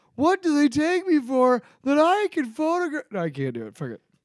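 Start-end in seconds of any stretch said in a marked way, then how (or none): 0.2-3.1 stand-up sitcom comedian voice, pitched very high. Doing a bit as a bank clerk with a Seinfeld voice. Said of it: "he's gonna be Seinfeld".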